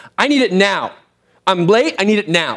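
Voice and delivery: pushy, insistent, urgent and impatient yelling. Speaker recounts an impatient man at a restaurant counter; imitating someone yelling. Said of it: "He's like yelling at this person".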